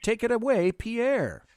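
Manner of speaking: plain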